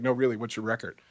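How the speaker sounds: put-on deadpan, flat voice. Retelling a former coach's blunt question, imitating Smitty deadpan. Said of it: "Smitty, deadpan".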